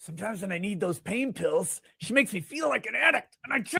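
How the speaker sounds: very low, mocking parody voice. Doing an impression of the other speaker complaining about pain pills: mocking impression of the other speaker. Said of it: "Let me do an impression of you right now".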